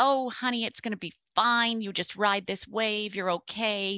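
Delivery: sweet, charming Southern belle voice, all charm. Recounting calling Leanne, voicing her reply as a sweet Southern belle. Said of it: "very sweet and charming and Southern".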